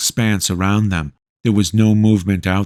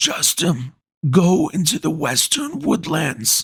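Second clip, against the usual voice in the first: weak, wheezing, high-pitched voice; 9 semitones higher, 3 dB quieter than usual. A man who needs rest beckons another to his side, in a weak, wheezing voice. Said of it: "His weak voice wheezed".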